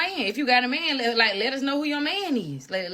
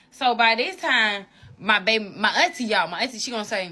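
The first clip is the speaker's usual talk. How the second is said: usual speaking voice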